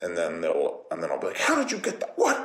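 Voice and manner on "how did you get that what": very high, playful, pretend outrage in fun. Retelling playing fetch with a dog, pretending to be mad. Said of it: "I'm like fake mad".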